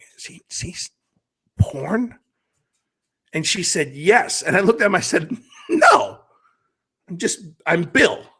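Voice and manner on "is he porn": whispered, quieter and much slower. Telling a story, you whisper a question about a man to your wife; whispered. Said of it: "I whispered to her".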